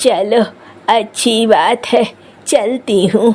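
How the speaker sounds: put-on low-pitched elderly woman voice. An old woman, told to leave by a wealthy person, takes her leave: old woman voice. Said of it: "ये बुढ़िया खाना मांग रही है, / ये बुढ़िया खाना मांग रही है, / इस बेचारी बूढ़ी की भूख तो मिट जाएगी ना।".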